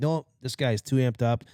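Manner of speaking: ordinary talk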